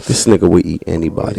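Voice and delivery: silky, smooth on-air radio-host voice. Joking in a group, switching to a smooth radio voice. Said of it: "I'm gonna say it with my smooth radio voice".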